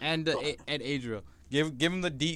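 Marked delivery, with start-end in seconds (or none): none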